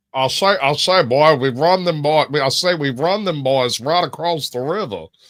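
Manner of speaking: put-on, loud, high Southern cartoon character voice. After Foghorn Leghorn is named, the speaker does a Foghorn Leghorn voice. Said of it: "you doing that voice like that".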